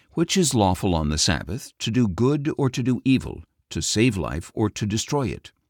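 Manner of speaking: ordinary delivery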